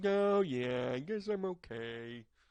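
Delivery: very slow, mopey, gloomy, drawn-out voice. Horoscope reader voicing how Aries feels right now, in a mopey Eeyore voice. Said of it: "I feel a little Eeyore with you".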